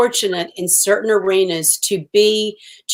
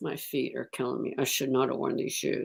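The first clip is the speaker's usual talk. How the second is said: very quiet, close, hushed half-whispered aside; 8 semitones lower, 14 dB quieter than usual. Retelling what Oprah said in her ear: imitating Oprah half-whispering. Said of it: "she whispers in my ear and she goes".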